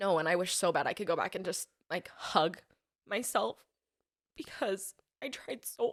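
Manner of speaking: crying while speaking, tearful. Answering whether you're still breastfeeding, embarrassed to be crying; crying. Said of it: "Oh my gosh, I'm sorry".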